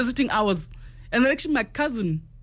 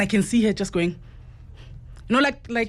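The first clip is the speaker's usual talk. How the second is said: plain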